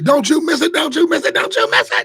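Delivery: repeated call, very high and very loud. Quoting a catchphrase the way Michelle Pitch would say it. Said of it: "Like Michelle Pitch would say".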